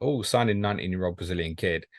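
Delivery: ordinary delivery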